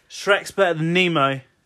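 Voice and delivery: loud, slowed-down shout.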